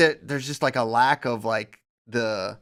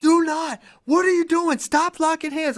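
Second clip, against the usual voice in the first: put-on, furious, very high, angry screaming. Telling a story about a coach mad at a young kid, imitating a coach screaming. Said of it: "He's like screaming at him".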